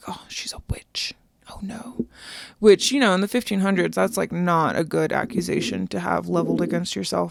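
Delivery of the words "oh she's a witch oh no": breathy, hushed whisper. Retelling how people whispered about a widow in the fifteen hundreds: retold whisper. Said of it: "they're whispering".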